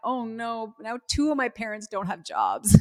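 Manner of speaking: put-on upset child voice, high, loud, near tears. Retelling a daughter's reaction to news of a new company: imitating a crying daughter. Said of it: "my twelve-year-old daughter starts to cry".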